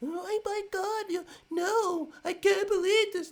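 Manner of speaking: very high, very loud, slow, drawn-out whine. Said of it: "like a whiny little girl".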